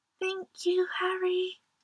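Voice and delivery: barely audible, just loud enough to hear. Narrating a story, the dinosaurs thank harry: just loud enough to hear. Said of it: "just loudly enough for Harry to hear".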